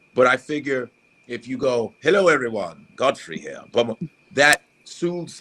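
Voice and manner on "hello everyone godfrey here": put-on, swooping British accent. Showing how a calm british accent soothes people: put-on british accent.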